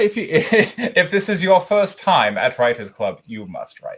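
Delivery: British-accented delivery. Doing a Fight Club bit about Writers Club in a British accent. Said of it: "I'm doing Fight Club with a British accent".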